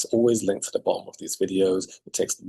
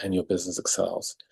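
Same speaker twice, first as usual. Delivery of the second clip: normal talking voice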